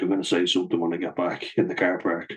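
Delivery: plain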